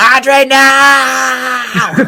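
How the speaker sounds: very high, shrill, frantic scream, drawn out. Describing his wife's reaction while watching, imitating his wife screaming. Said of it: "You should have saw my wife scream".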